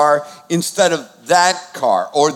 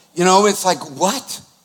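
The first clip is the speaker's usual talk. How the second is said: ordinary talk, nothing marked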